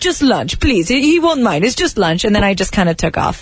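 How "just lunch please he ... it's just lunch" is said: pleading tone in an imitated Persian accent. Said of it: "I like the accent".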